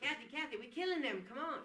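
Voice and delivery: very loud, high bellowing holler. Asked by another speaker for an impersonation of Bert, impersonating Bert. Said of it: "let's hear your impersonation of Bert".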